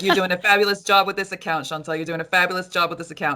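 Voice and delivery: thick, strong put-on New Jersey accent. Retelling what a woman said about the account: imitating a strong Jersey accent.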